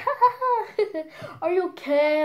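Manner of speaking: high, laughing, taunting voice. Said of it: "she was laughing".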